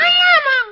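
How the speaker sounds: loud shrill yelling. Demanding bread and jam from someone doing dishes, yelling. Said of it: "Who are you yelling at?".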